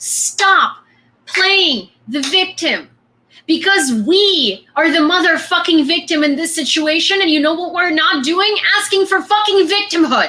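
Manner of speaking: furious, heated, angry ranting outburst. Speaker ranting to listeners, then apologizing for it, screaming. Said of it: "I'm sorry for screaming".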